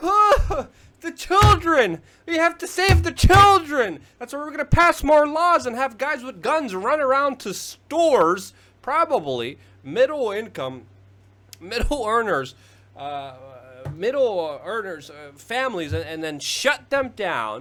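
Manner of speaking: loud, high, worked-up angry rant. Ranting about new laws on heated liquid nicotine, angry. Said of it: "this gets me angry".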